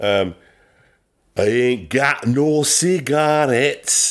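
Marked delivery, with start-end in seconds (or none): 1.4-4.1 put-on high-pitched, slow Scottish accent. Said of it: "pretty good Scottish accent I did there".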